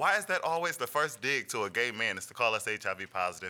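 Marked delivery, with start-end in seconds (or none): none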